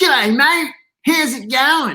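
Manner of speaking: put-on over-the-top Australian accent, laid on thick, drawn out. Retelling greeting passersby from the front steps at about three, in an over-the-top Australian accent. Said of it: "talking this really over-the-top Australian accent".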